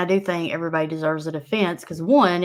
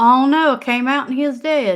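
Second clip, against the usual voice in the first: put-on high, loud country hillbilly accent; 7 semitones higher, 5 dB louder than usual. Speaker acts out how they once broke the news, in a hillbilly accent. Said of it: "I said it like a hillbilly".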